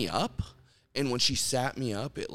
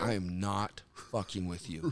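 near-tearful, insistent voice close to crying; 5 semitones lower, 6 dB quieter than usual. Retelling pleading with his wife about his legs, almost in tears. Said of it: "almost in tears going".

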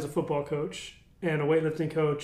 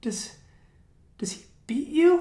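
put-on child's whisper, much higher; 10 semitones higher than usual. Recalling other kids asking about his dad the coach, retelling a kid's whisper. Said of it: "like whispering".

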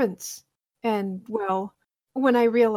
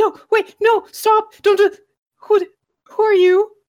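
very high, very loud, shrill, frantic panicked pleading; 12 semitones higher, 10 dB louder than usual. Voicing a character who has just awakened, panicked. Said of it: "He awakens in a panic".

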